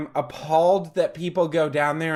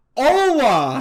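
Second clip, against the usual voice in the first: put-on loud, high, drawn-out yell; 9 semitones higher, 5 dB louder than usual. Retelling how a tourist greeted a waiter, imitating someone yelling. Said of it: "yells it at him".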